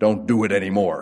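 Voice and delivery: grave, dead-serious, solemn tone. Retelling what officials in clerical robes told them, before Peter responds: solemn, serious tones. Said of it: "in very solemn, serious tones".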